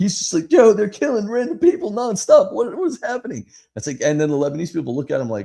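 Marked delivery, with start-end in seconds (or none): 0.5-3.5 very high, loud, frantic freaked-out outburst. Retelling a visitor's shock at bombings, imitating someone freaking out. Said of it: "he's losing his mind".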